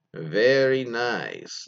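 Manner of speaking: exaggerated, strongly rolled r sounds. Reading a listener's story about her boyfriend's compliment, Borat impression with rolled R's. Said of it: "he actually has like five R's in there".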